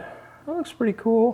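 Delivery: high-pitched excited voice. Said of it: "my voice goes way up when I think it's really cool".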